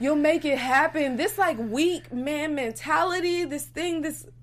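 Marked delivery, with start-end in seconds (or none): 1.2-4.2 voice breaking and cracking with feeling. Talking to a live chat audience about a relationship, voice cracking. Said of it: "my voice cracking".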